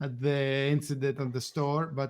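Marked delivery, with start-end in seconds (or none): none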